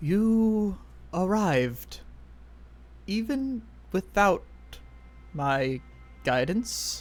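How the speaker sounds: echoing high voice with "you" stretched long. Voicing a character who greets the ones who have arrived: quiet, echoey voice. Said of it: "with a very like quiet, echoey voice".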